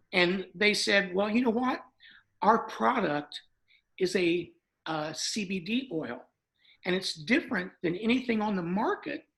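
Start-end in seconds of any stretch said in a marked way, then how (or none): none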